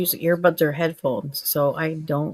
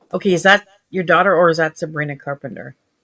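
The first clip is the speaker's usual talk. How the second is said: ordinary talk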